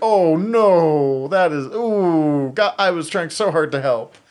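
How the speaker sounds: loud, anguished, regretful cry. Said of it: "you definitely saw his".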